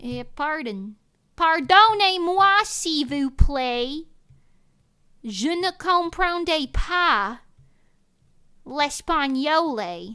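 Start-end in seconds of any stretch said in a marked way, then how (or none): 1.4-10.2 Southern American accent, louder. Speaking French for fun, in a Southern American accent. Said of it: "In like a Southern American accent".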